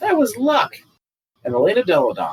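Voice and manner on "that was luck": put-on tiny, squeaky little-kid shout, very high. Retelling heckling a player at a game as a child: imitating own squeaky kid yell. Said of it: "my squeaky little kid voice yell".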